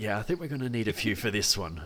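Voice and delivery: very hushed voice. As the game master, voicing a character agreeing as the party moves back, very hushed tone. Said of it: "in a very hushed tone".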